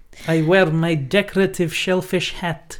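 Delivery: put-on, generic, vague Eastern European accent. Podcast host playing a villager in a comedy bit, generic eastern european accent. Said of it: "my just generic Eastern European accent".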